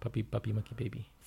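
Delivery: stumbling, then restarting on the first word. Repeating the name again when asked to go quicker: said faster. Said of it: "Say it faster".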